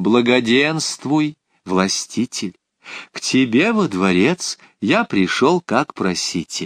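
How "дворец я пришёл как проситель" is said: ordinary delivery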